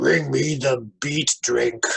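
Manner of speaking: growling, growly beast voice. Voicing the creature they just described, the speaker uses a deep, growly voice. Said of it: "kind of like deep, growly".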